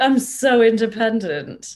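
self-satisfied delivery. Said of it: "might even feel a bit smug".

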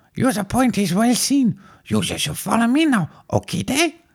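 very high-pitched alien creature voice. Answering Frank Kuzo, who has just introduced himself as Coach, do a Jar Jar Binks impression. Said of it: "this is when Jar Jar Binks met".

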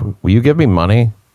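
sudden, blunt, flat put-on straight-faced tone, no sadness. Retelling how an ex dropped her sad act: imitating a straight-faced demand. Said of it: "gets really straight in her face like this and goes".

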